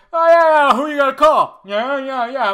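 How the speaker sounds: over-the-top New York cabbie voice, very high, very loud. Mocking a possible cameo by the returning cast, doing Dan Aykroyd as cliché New York cabbie. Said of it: "cliche uh, New Yorker uh, taxi cab driver".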